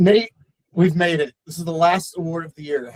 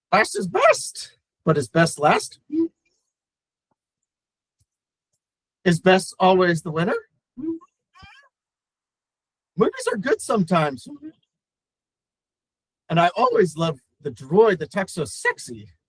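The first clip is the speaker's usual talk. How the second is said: swooping, sing-song character voice, pitch swinging widely; 3 semitones higher than usual. Presenting an award as Master Yoda: Yoda voice. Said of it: "Master Yoda".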